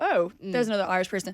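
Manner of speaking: normal talking voice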